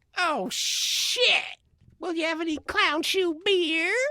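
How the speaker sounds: very high nerdy character voice. Acting out Steve Urkel showing up on tour: Steve Urkel voice. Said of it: "Steve Urkel shows up? It'd probably be a little something like this".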